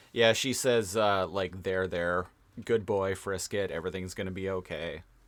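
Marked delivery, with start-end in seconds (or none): none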